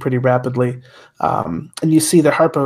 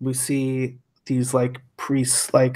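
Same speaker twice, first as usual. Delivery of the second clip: ordinary talk, nothing marked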